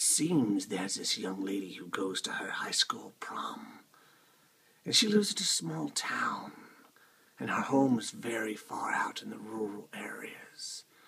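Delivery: spooky, scary campfire storytelling narration voice. Telling a scary story about a girl going to prom, in a scary storytelling voice. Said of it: "I'll go back to the scary voice".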